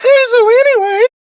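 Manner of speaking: high-pitched voice crack. Imitating another speaker's voice cracking high: imitating a voice crack. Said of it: "you went up, like, five octaves".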